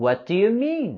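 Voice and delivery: pitch dropping down on mean. Practicing a question, falling intonation on mean. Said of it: "we're going to have a falling intonation with this question".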